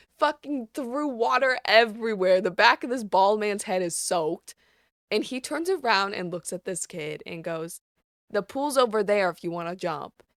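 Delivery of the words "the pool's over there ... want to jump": very stern, firm fatherly voice. Retelling what a bald man in a hot tub told a kid, mock-stern dad voice. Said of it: "he said it in a very stern, like, dad voice".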